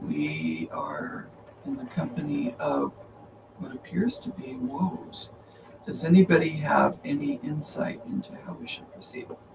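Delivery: low-toned, kept down. Riding back as a scout to warn the company: low tone. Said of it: "and in a low tone say".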